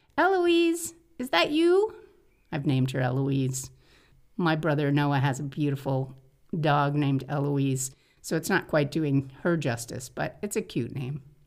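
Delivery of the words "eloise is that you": very high calling voice, way up high. Speaker retells answering a cat outside his window, in a kitty calling voice. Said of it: "in my kitty calling voice".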